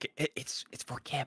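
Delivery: slow, hushed, halting, stumbling whisper. Retelling what she will say about the present: imitating a whisper. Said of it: "whisper, say".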